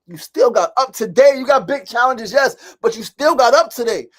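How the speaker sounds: very high, very loud, fired-up, pumped-up preaching delivery. Speaker talks to y'all and Mona, fired up. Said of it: "I'm fired up, y'all".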